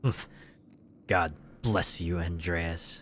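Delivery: snide, sarcastic and condescending. Replaying a monk's farewell as he imagines it: condescending voice. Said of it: "most condescension just dripping out of his mouth".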